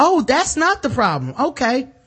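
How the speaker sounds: mocking high voice. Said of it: "so I can be like".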